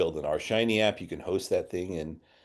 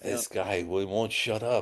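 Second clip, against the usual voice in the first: put-on French accent; 3 semitones higher than usual. Imitating a quiet colleague who wants to speak: put-on french accent. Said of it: "That was my French accent right there".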